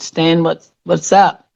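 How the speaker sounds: ordinary talk, nothing marked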